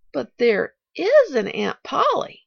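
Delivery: slow, worried, anxious, insistent. A child questions the hired girl: anxious demand. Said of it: "demanded the child anxiously".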